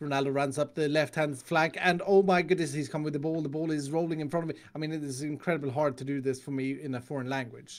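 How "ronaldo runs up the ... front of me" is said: ordinary talk, nothing marked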